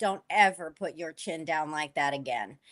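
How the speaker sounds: mock under-the-breath muttering. Retelling a remark a makeup artist made: imitating someone saying it under her breath. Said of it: "under her breath".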